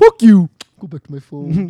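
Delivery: loud, slow, dragged-out voice. Imitating a friend who is always on his phone: imitating Cody. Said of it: "impersonation to this guy".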